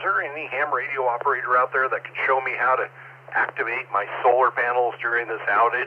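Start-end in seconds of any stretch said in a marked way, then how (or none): none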